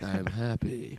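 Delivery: soft, flat, glum, sad-sounding monotone. Teasing the co-host by imitating how he sounded: imitating a flat, sad "I'm happy". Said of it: "you're like".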